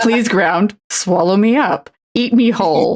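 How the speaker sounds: mock mortified voice. Retelling how mom reacted to the catcaller: imitating a mortified mom. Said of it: "my mom is mortified as hell".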